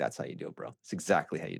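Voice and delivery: acted-out smug, cocky, hushed, bragging whisper. Retelling standing with Joseph outside the front door: retelling a cocky remark. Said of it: "and I'm all cocky".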